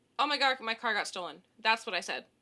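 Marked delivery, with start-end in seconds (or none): none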